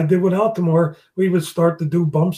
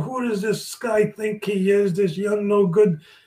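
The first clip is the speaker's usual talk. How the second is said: furious, storming rant full of swearing; 3 semitones higher, 3 dB quieter than usual. Retelling how someone stormed into the dressing room: imitating someone storming and cursing. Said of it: "cursing and swearing".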